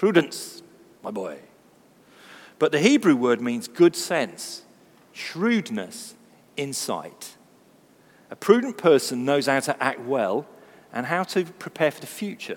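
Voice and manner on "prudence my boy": put-on low-pitched Scottish grandfather voice. Mocking how an old-fashioned word sounds, in a scottish grandfather voice. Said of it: "like a Scottish grandfather giving financial advice".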